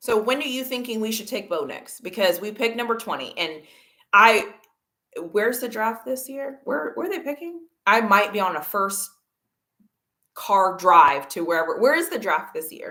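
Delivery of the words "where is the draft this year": pushy, demanding, aggressive tone. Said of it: "That sounded really aggressive".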